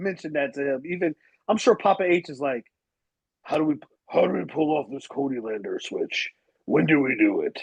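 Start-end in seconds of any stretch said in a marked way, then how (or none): 3.4-7.6 rough, raspy wrestler voice with swinging pitch. Imitating Papa H planning a switch: Triple H voice. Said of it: "I was trying to sound like Triple H".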